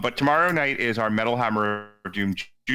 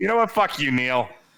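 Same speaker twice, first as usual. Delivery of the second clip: thick, heavy New York accent, much higher pitch; 4 semitones higher than usual. Teaching someone how to tell another person off, in a thick New York accent. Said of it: "your thickest New York accent".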